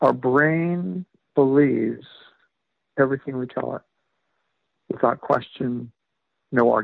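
deliberately very slow, drawn-out delivery. Explaining the basis of their books for a host's listeners, speaking really slowly. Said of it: "I'll say this really slowly".

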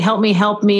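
put-on flat, droning female monotone. Retelling a woman in a wheelchair calling out, imitating Betty's monotone plea. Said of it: "in a monotone oh. voice".

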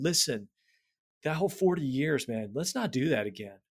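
play-acted imploring, begging tone. Imagining Moses speaking to Israel about the 40 years, imitating Moses pleading. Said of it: "Moses' voice pleading with Israel".

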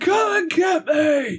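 faint, far-off, very high, drawn-out scream. Narrating a scene, a voice heard faintly in the distance: Scraw screaming faintly. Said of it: "you hear a voice that sounds like Scraw screaming".

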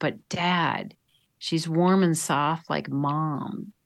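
unhurried, slow, soft half-whisper. Retelling an athlete's words to his dad: imitating a half-whisper. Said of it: "he whispered in my ear".

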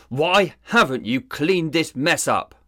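roaring, high-pitched bellow. Narrator reads Sizemore, stepping into the house: bellowed. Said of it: "Sizemore bellowed".

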